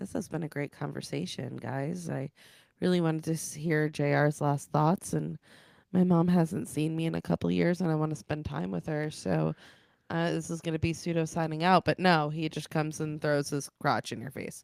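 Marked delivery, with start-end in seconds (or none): none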